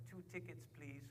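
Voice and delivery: high, soft, fake French accent.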